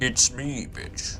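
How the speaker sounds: put-on deep, booming voice. Retrying the line, more like James Earl Jones. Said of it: "more like James Earl Jones".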